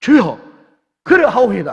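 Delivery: loud, fervent voice.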